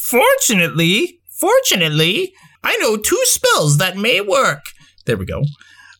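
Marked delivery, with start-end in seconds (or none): 0.0-4.6 high, drawn-out put-on sorceress character voice. Reading an adventure story aloud, voicing the sorceress: sorceress character voice. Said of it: "I feel like I lost her voice".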